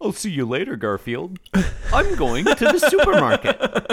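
very high, loud, swooping sing-song voice. Voicing a comic strip character leaving for the store: John Arbuckle voice. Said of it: "a reasonable John Arbuckle voice".

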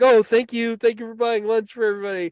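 mock shouting. Acting out the shout he told everyone to make as the judge walks by: retelling a shout. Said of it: "make a big deal of like shouting".

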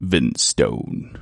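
very deep, low baritone delivery. Saying a man's name the way he does: Ben Stone's deep voice. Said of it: "he has this really baritone voice ... I can't say it without doing it that way".

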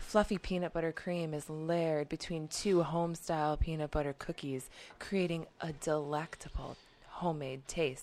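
horny, suggestive, come-on ad-read delivery. Reading product copy aloud, in a horny way. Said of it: "Why are you reading it so horny?".

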